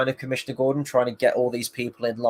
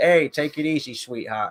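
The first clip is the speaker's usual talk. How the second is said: put-on easygoing New York accent; 3 semitones higher than usual. Reviewing a film's performances, imitating Colin Farrell's New Yorker accent. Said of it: "He's like this kind of New Yorker".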